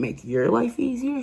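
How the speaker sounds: high-pitched shrill shout. Retelling how a neighbor answered a police officer: imitating a neighbor yelling. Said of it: "She's yelling".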